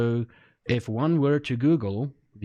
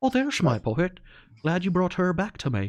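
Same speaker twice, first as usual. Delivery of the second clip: bad put-on Irish accent with raised pitch; 6 semitones higher than usual. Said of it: "she's supposed to be Irish".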